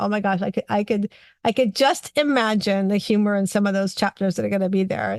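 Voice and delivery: ordinary delivery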